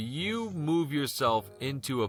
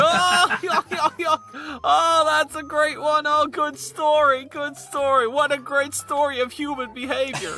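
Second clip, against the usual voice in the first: chuckling while talking; 9 dB louder than usual. Voicing a voice heard coming down the road, laughing while talking. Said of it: "And he goes".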